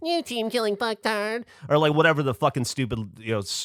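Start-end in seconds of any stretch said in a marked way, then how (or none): 0.0-1.4 very high, derisive, jeering send-up. Retelling how he mocked the actors' lines: mocking the actors' lines. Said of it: "I was mocking all of your lines".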